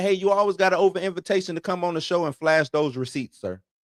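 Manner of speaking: ordinary talk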